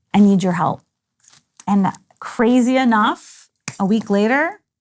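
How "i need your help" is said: tearful, crying pleading, louder. Retelling praying on the balcony while crying: retelling own crying plea. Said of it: "I'm crying and saying".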